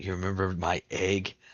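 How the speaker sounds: hushed whisper. Acting out what another person will say, whispering. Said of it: "kind of get down a little bit and whisper".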